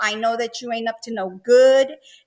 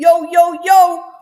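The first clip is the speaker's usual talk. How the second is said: very loud, high attempt at New York accent; 6 semitones higher, 8 dB louder than usual. Speaker praising New York accents tries one themselves, attempted New York accent. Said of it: "a New York accent".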